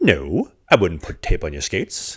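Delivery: swooping put-on Swedish accent on every word. Retelling what the equipment manager said, imitating swedish accent. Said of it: "in his, like, Swedish accent".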